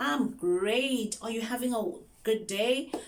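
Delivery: high, loud excited chatter. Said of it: "you need to sound excited".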